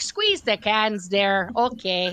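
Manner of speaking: slow, put-on Wisconsin accent, held throughout. Retelling greeting a course room, stuck in a put-on Wisconsin accent. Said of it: "I couldn't drop the accent for the life of me".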